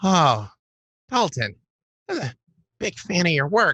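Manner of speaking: tiny, small, high voice. Storyteller voices an unseen speaker addressing a player, in a small voice. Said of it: "you do hear a small voice say".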